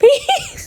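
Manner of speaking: high-pitched voice, laughing through the words.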